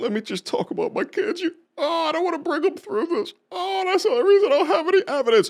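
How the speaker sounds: very high, put-on weepy fake crying. Mocking a woman's plea to the judge in court, mock crying. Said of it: "For her to just turn off the cry".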